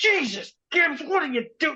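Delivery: very high, yelling, scolding voice. Speaker imagines a coach shouting at the chosen linebacker; imitating a red-faced yelling coach. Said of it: "like a yelling, like red in the face kind of coach".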